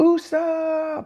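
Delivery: very high-pitched little scream. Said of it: "the little screams".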